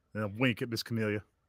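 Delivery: ordinary talk, nothing marked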